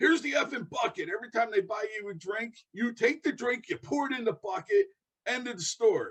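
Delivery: high, furious scream like a madman. Retelling what an old bar owner said: imitating someone screaming like a lunatic. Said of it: "He starts screaming at me like a lunatic".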